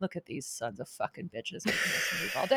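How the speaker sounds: barely voiced, whispered, grumbling mutter. Retelling what a woman said on first meeting her, muttered under her breath. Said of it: "talking shit under her breath".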